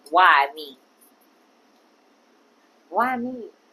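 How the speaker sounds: irritated, annoyed, irked. Telling Frank how they feel about the situation, irritated. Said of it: "I'm irritated".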